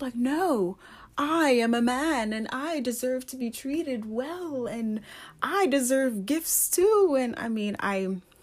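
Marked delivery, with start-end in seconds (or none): 0.1-7.1 put-on, heavily sarcastic, high voice. Voicing what men now say about deserving good treatment: sarcastic imitation. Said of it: "I probably sound very sarcastic right now".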